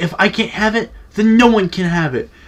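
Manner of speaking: put-on angry child tantrum. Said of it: "getting mad as shit".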